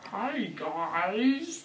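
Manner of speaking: put-on old man voice with swooping pitch.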